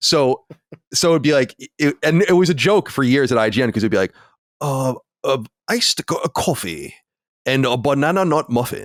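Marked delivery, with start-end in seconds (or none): 4.6-8.9 exaggerated fake Japanese accent. Retelling how he used to order items, in a racist fake Japanese accent. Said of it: "like a racist Japanese accent".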